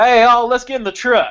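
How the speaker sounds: cowboy robot voice, southern accent, high and loud. Mocking robots that act like cowboys, the speaker demonstrates a southern robot accent. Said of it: "no robot should have a southern accent and be like".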